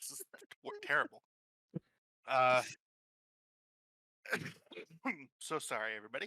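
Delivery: laughing while choking and coughing. Apologizing to the table while choking on a popsicle, laughing and choking. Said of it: "now I'm laughing and choking".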